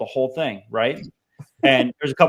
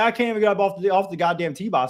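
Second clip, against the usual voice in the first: put-on laughing while talking; 7 semitones higher than usual. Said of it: "he couldn't help but laugh about it".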